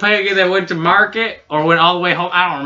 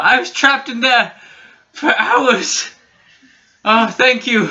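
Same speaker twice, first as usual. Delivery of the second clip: relieved, grateful elf voice, higher and slower; 6 semitones higher than usual. A narrator voices a skinny sun elf crawling out of a crevice, relieved grateful elf voice. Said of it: "skinny elf, sun elf, crawls out".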